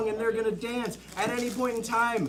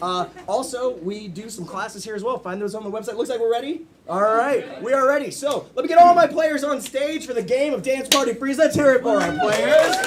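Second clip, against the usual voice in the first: plain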